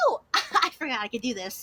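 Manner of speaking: breezy, happy, cheerful, casual, swooping pitch. Playing a character who claps his hands: happy, casual in character. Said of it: "he claps his hands, and he's like".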